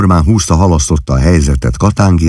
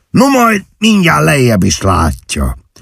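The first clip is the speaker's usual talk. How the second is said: abrupt, ominous, high swooping delivery; 9 semitones higher than usual. Old Katángi speaks to Mr. Majka, drawing his pistol; said suddenly. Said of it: "szólt hirtelen a vén Katángi".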